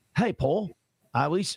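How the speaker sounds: attempted Australian accent, slow. Trying out an accent while addressing someone he went to school with: attempted australian accent. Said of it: "That was going to be Australian".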